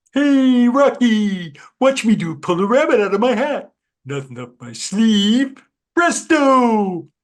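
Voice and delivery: belted high, swooping and loud. A performer recalling the impression nobody else was doing, in Bullwinkle voice. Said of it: "Bullwinkle J. Moose".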